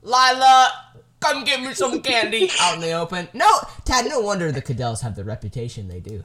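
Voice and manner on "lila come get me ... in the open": shrill, very high, loud demanding holler. Retelling how someone lying on his bed yelled, imitating a yell. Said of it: "just yelling".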